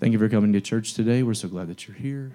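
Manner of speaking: very low, flat, reserved monotone. Showing a usual church welcome, delivered reserved and very monotone. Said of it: "very monotone".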